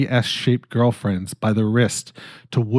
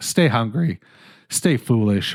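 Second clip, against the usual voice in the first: voice cracking and breaking. Host signing off the episode to listeners, voice cracking. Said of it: "My voice just cracked".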